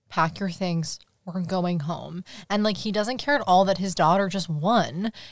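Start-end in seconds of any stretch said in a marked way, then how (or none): 0.1-2.2 put-on dark, menacing, intense, scary voice. Retelling what a dad says after his daughter's race: imitating an intense scary dad. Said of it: "so intense and scary".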